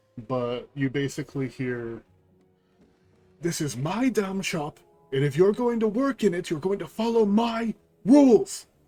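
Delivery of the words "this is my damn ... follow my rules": feminine voice, shrill and loud, yelling. Voicing a character heard shouting inside a shop: feminine voice shouting. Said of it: "a feminine voice shouting".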